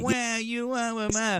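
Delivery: mock whining voice. Mocking the other debater's complaints: mocking whining voice. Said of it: "whining like a little bitch".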